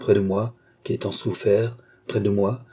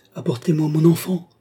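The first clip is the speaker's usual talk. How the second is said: sudden, high, explosive bursting cry; 7 semitones higher than usual. A young mother, kept from her child, crying out in an outburst. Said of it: "s'écria la jeune mère avec une explosion".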